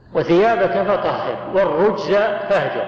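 plain

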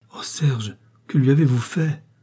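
voice choked and strangled with fright. Lise cries out to Serge, her voice choked with fright. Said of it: "d'une voix que l'effroi étranglait un peu".

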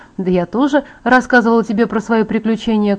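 ordinary delivery

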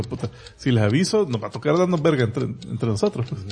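ordinary talk, nothing marked

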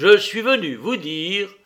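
stern, pressing on words. Narrator reads a man resuming after a silence, in a stern voice. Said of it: "reprit d'une voix sévère".

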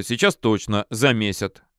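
ordinary delivery

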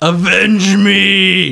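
screamed, high, slow and drawn-out.

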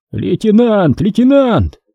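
high-pitched, jubilant, overjoyed shouting. Several men trapped below recognize their lieutenant above, yelling joyfully. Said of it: "Взахлеб обрадованно заорали внизу несколько человек".

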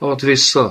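spoken while panting. Demanding that what was taken from him be given back, panting.

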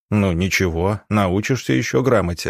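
plain

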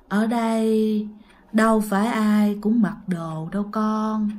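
slow, dragging speech, every word stretched out. Imitating how grandma says a line, her speech long and dragging: slow, drawn-out speech. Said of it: "không phải là nói bình thường như là thi đâu, mà cái câu nói của bà nó kéo dài, nó lê ra".

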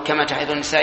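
ordinary talk

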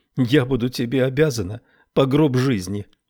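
ordinary delivery

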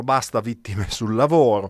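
ordinary delivery

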